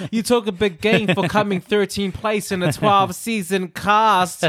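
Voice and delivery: ordinary talk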